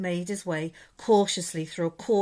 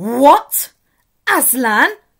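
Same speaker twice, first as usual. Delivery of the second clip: very loud, high exclaiming outcry; 7 semitones higher, 14 dB louder than usual. Narrator reads the Queen reacting to Edmund's news, crying out. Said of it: "cried the Queen".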